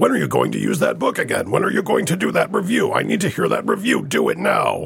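put-on angry anime voice, rough and swooping. Mimicking impatient fans demanding a book review: angry anime character voice. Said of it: "my angry anime character".

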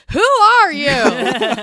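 very loud, high, exasperated angry yell. Retelling a movie character confronting Jin: imitating a yell. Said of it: "he just yells out".

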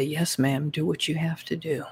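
put-on sweetly innocent voice. Retelling a scary guy's reply to having hairs pulled: imitating a sweet innocent reply. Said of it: "the scary guys were the ones that were real sweet".

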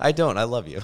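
very loud, high, barely suppressed laughter. A husband answers his wife, who says he laughs at her: holding back a laugh. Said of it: "You can't even say it with a straight face".

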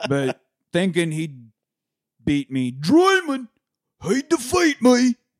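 booming, slow, belted delivery with swooping pitch. Retelling a movie ending scene: Jason Statham impression. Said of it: "That's my Statham impression".

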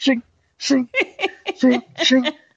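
high jammed-lock sound effect. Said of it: "you push it and it goes".

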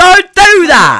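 high, loud, drawn-out, horrified yell.

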